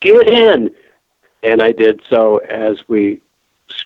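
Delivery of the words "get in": mock very high-pitched holler. Retelling a rescue by van in a parking lot: imitating someone yelling. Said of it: "and yelled".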